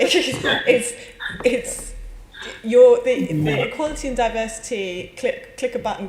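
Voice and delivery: high talking broken by laughter. Answering a question about compulsory training, laughing while talking. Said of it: "Sorry, I'm laughing".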